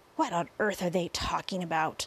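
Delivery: plain reading voice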